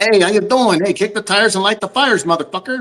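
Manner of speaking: put-on mafia New Jersey accent. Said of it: "It sounds like the mafia".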